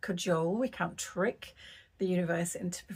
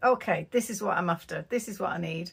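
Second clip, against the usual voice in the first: firm, plain, no-nonsense matter-of-fact tone; 4 dB louder than usual. Recounting what was said aloud to the universe while driving home, retelling a matter-of-fact statement. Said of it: "just said so matter of factly".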